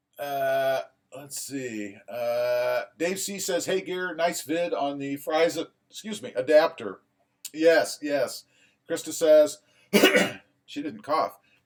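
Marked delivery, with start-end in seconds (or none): none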